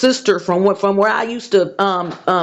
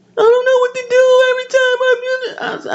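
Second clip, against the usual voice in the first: mock sobbing, very high-pitched crying voice. Retelling what a crying sister said on the phone: imitating someone crying. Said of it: "this woman is profusely crying".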